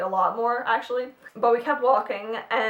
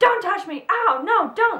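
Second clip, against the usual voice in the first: acted, very high, pained, drawn-out scream; 10 semitones higher, 4 dB louder than usual. Retelling a woman screaming at a man walking toward her: imitating a woman screaming. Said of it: "she was screaming".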